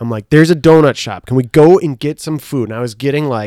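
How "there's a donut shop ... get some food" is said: acted-out hounding, nagging, loud, pestering tone. Retelling nagging friends for food late at night: retelling own pestering. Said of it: "I was just, like, hounding them".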